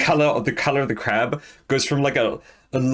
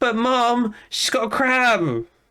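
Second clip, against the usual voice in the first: put-on acted child voice, higher pitch; 9 semitones higher than usual. Voicing a child who calls to Mom about a crab: voicing a child calling Mom. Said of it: "and he goes".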